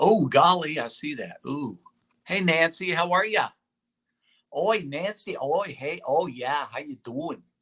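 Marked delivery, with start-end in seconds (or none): 2.2-7.4 clumsy, unconvincing attempt at a Canadian accent. Speaker greeting someone while trying out an accent: attempted canadian accent. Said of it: "I'm trying to do my Canadian voice".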